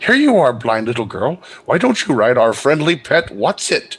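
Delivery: snarky, jeering, derisive mocking taunt. Voicing a character who speaks to a blind little girl, in a mocking tone. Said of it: "she's saying in a mocking tone".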